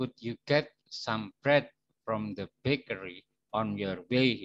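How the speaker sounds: far too slow, unnaturally stretched, drawn-out English. Showing an unnatural delivery of an English sentence, far too slow. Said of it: "Itu tidak normal, tidak wajar, tidak natural seperti itu, terlalu lambat".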